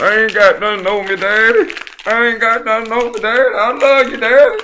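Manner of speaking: very high, very loud, shrill sniffling tearful cry. Playing a child pleading with Daddy in a skit: acted sniffling and crying. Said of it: "all that sniffling and crying".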